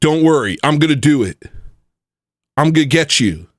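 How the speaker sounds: mocking, sent-up tough-guy bravado and posturing. Mocking someone's online threats against kids: mocking tough-guy imitation. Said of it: "And he's saying that".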